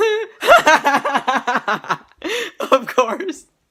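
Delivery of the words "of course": high, loud giggling. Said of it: "I've been giggling".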